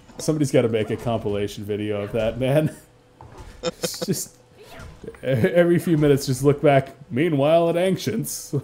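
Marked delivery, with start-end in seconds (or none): 7.1-8.6 put-on cartoon announcer voice. Commentating a game, cutting to another fight in Justice League announcer voice. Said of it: "the Justice League announcer voice".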